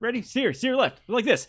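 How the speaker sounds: very upbeat, high-pitched and fast. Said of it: "he peps way the fuck up".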